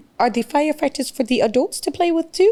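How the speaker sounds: put-on strong Spanish accent. Quote your friend, who talks like Sofia Vergara, in a Sofia Vergara voice with a strong Spanish accent. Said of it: "that has the strong Spanish accent".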